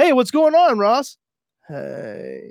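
put-on high, swooping, sing-song sitcom-actor voice. Showing the limit of a David Schwimmer from Friends impression: David Schwimmer impression. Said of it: "my David Schwimmer from Friends impression".

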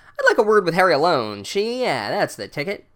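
put-on 1930s-style old-time gangster voice. Speaker retells a character's lines from a story, in a 1930s gangster voice. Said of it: "he talks like some gangster from the 30s".

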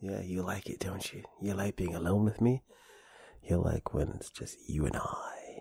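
gentle whispered ASMR delivery. Talking one-on-one to the listener, in a soft asmr voice. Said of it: "Got a little ASMR going on".

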